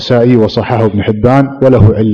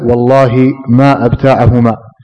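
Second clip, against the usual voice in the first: usual speaking voice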